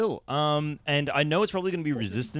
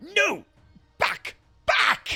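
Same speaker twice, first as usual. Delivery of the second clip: very high-pitched, frantic put-on yelling; 13 semitones higher, 5 dB louder than usual. Voicing a character swinging a staff at a dragon: in-character frantic shout. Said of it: "Rudy swings that staff. He goes".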